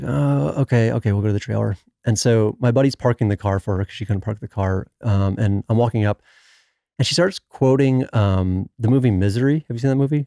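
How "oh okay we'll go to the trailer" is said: put-on begrudging, reluctant tone, slower. Retelling how a woman agreed to stay in the trailer, imitating a begrudging reply. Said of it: "she like kind of begrudging".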